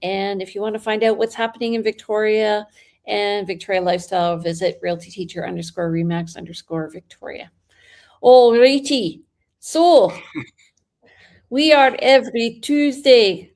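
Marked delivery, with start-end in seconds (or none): 8.2-13.4 very loud, very slow, fake Scottish brogue. Speaker closing out the show: bad Scottish accent. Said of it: "she says with a bad Scottish accent".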